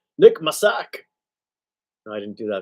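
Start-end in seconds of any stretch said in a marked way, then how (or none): 0.2-1.1 loud, clumsy, bad fake Scottish accent. Speaker reads a tweeted name aloud, in a bad Scottish accent. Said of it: "That's a bad Scottish impression".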